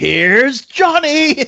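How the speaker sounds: high, screamed delivery. In a tabletop game, a player's dwarf bursts through the falling door: screaming. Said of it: "I scream".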